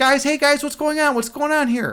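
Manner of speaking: high, fast, nervous, rattled-off chatter. Imitating Alex Grey when he is nervous, as a buddy described: imitating Alex Grey talking nervously. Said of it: "when Alex Gray's nervous, he talks like this".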